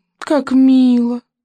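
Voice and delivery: high, purring, witch-like coo. A witch watches the fish-child bow low to his friend: purring witch. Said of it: "промурлыкала ведьма".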